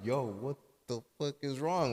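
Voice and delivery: quietly freaked-out, hushed, low-key panicked confusion. Retelling a boyfriend's reaction to his girlfriend laughing and crying, imitating his panic. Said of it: "he starts to like low key panic".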